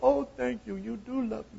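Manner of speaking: put-on very high, creaky, drawn-out spoiled-kid whine. Describing a child who finally gets the cookie, imitating a spoiled child. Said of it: "doesn't it sound like a spoiled child to you?".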